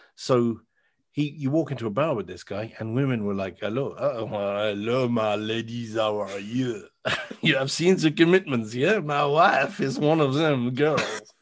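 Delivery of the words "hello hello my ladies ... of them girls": put-on French accent. Retelling how a Frenchman from Marseille greeted women in a bar: imitating a Marseille French accent. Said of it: "so he's got exactly the same accent".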